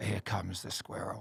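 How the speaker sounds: whispered, hushed, low wildlife commentary voice. Describing a voiceover job they struggled with, the speaker demos a low wildlife commentary voice. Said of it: "wildlife commentary".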